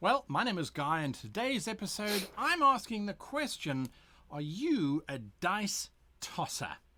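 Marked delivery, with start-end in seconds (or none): 4.3-6.7 slow, slightly venomous tone. Guy, hosting an episode, puts a question to listeners with a little venom. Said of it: "with a little bit of venom in my voice".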